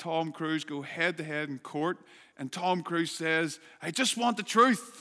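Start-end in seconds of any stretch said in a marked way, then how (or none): 3.8-5.0 high, loud put-on American accent. Quoting Tom Cruise in the court scene of A Few Good Men, in an American accent. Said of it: "Did you like my American accent there?".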